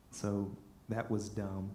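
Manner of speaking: normal talking voice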